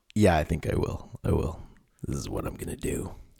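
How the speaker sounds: playful put-on sexy voice. On a podcast, asked by the other host to keep it up, in a mock sexy voice. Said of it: "Can you just do this for every podcast".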